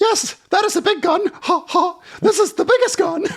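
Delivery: very high-pitched, squeaky clownish voice. A narrator reads a clown holding his revolver high: squeaky clown voice. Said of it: "I squeaked".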